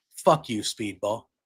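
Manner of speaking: low, restrained, understated delivery. Retelling a scene from an online clip, one figure confronting another: retelling a very quiet line. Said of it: "M V P very quietly says".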